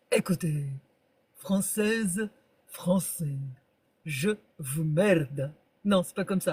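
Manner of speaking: put-on low French accent, formal statesman address voice. Talking French politics, speaker tries to do how Chirac spoke: Chirac voice. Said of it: "Comment il faisait Chirac?".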